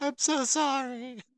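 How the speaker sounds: very high, feminine voice calling out. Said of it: "feminine voice, uh, call out".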